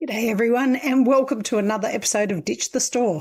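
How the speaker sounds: rough, croaking, hoarse voice. Host opening an episode of Ditch the Store, in a croaky voice. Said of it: "I sound very croaky when I started there".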